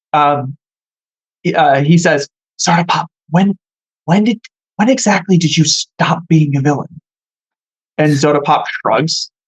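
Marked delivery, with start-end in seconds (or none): 2.5-7.0 lowered, dropped-down voice. Game narrator voicing a character who leans toward soda pop: lowered voice. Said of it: "he like lowers his voice".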